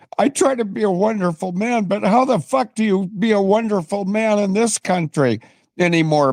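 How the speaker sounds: tearful, crying, high, choked-up voice. Speaker addresses a young woman whose late husband he wants to honor, crying. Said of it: "And I'm crying because".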